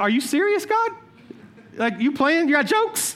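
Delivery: stunned, disbelieving outburst. Retelling opening a gift with a live fish inside: retelling own shock. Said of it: "the first part of me is shocked".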